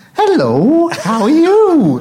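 very high, very slow, swooping ventriloquist puppet voice. Describing talking to a sock glove puppet, the speaker voices it in a ventriloquist voice. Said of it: "I would put on my ventriloquist voice".

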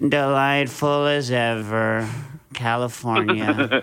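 mock downbeat droopy voice. Imitating the other speaker's greeting in a droopy voice: imitating a droopy glum voice. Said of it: "This is your droopy dog".

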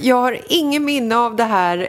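laughing a little, embarrassed. Told by the other speaker about a past unkind act, laughing a little in embarrassment. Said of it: "jag skrattar lite så här generat".

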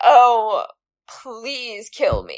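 very slow, resigned, agonized, drawn-out delivery. Describing someone resigned and angry, unlike Mr. Darcy: mock agonizing. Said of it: "or agonizing".

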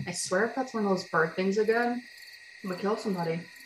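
quiet, half-swallowed muttering under the breath. A player speaking in character during a group game, quiet mumble. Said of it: "Ren quietly just kind of mumbles".

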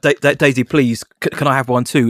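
very polite, courteous tone. Retelling how the other speaker asked for a photo too: imitating someone asking very politely. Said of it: "In a very kind of nice way".

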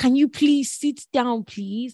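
loud screaming voice. Retelling the crew's orders to passengers: imitating screaming flight crew. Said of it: "the whole crew were literally screaming".

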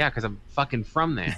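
ordinary talk

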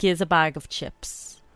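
imitated South Dublin accent. Asked to say the phrase again, now in a South Dublin accent. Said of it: "now do your South Dublin accent".

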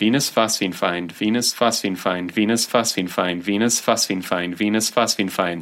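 ordinary delivery

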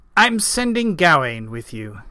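ordinary delivery

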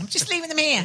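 put-on heavy Liverpool Scouse accent. Crissy Rock leaves donuts in the speaker's dressing room, Crissy Rock's very thick Scouse accent. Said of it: "with a very thick Scouse accent".

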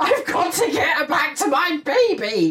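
very high, full-throated, acted-out shrieking scream. Speaker retells a mother back at work in a corridor, imitating someone screaming. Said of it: "stood in the corridor screaming".

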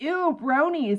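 said really loudly. Retelling what a friend says when passing a group of bronies, retelling a loud remark. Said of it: "he just says really loudly".

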